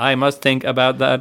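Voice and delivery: machine-like robotic computer voice. Describing how a machine would respond, the speaker voices it in a computer voice. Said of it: "That's my computer voice".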